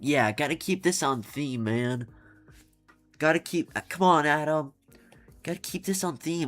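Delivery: put-on little, high, very childish chipmunk voice. Imagining Forsyth urging Adam on, Forsyth in a childish chipmunk voice. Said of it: "in like the most childish voice possible".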